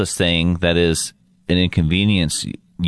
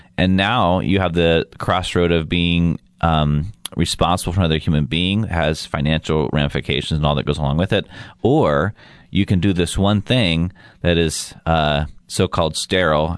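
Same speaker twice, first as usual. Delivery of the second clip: normal talking voice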